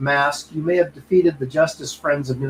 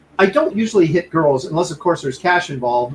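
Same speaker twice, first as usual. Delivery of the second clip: normal talking voice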